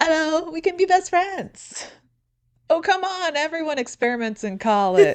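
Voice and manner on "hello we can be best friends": put-on high, loud French woman's accent. Retelling what he said, the speaker switches back to his French lady voice. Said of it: "goes back to his French lady voice".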